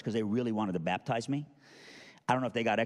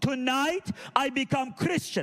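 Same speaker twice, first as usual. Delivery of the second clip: put-on scream, higher. Retelling a mother's phone call announcing her conversion: imitating someone screaming. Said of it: "literally screaming on the phone".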